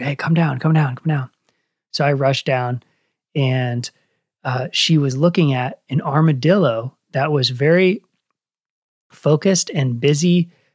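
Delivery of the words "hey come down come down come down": acted-out whisper. Retelling how the girlfriend called from the woods: imitating a whisper. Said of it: "she kinda whispered".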